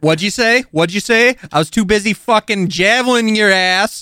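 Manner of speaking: put-on Jersey-accented character voice. A player in a tabletop game, slipping into the satyr's jersey accent. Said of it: "Why do I keep fucking talking like you?".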